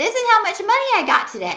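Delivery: excited yell, high and swooping pitch. Sharing the total after opening the day's mail, yelling. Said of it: "I'm sorry, I'm yelling".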